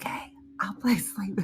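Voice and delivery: hushed, breathy, whispered voice-assistant style voice. Retelling how the voice assistant answered in bed: imitating a whispering voice assistant. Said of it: "She whispered back to me".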